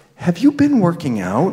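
stage-whispered, close and confiding. Telling a story about a woman who squeezed his bicep: retelling a half whisper. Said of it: "said in a half whisper".

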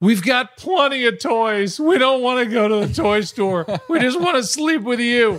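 put-on high, small, earnest little boy voice. A parent retells what their little son answered, imitating Wyatt. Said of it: "my little genius boy, goes".

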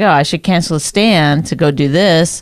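ordinary delivery

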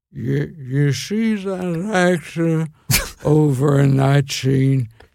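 put-on old man voice. Retelling what Groucho said while watching a late movie: old Groucho Marx impression. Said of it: "You doing old Groucho".

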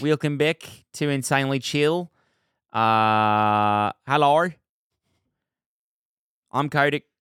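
slow put-on British accent, hello drawn out. Opening the show, a host clowns around in a British accent. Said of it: "that was British".

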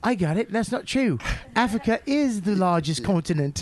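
worst-ever Australian accent, laid on badly, slow. Imitating Kelly correcting a remark: worst Australian accent. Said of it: "That is the worst Australian accent".

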